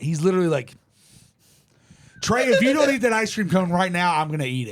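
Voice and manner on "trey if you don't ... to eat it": usual speaking voice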